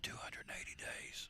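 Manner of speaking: hushed voice. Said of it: "I'm gonna whisper 'cause she don't wanna hear how long it is".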